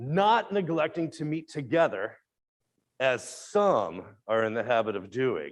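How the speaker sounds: slow, snarky, judgy, shade-throwing, with pointed pause. Showing how a reading can throw a little shade: snarky, judgy reading. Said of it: "if you say it like that, it just feels a little judgy".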